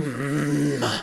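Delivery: low growling. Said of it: "Just a low growl going there".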